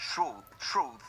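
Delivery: low-pitched, bad English accent.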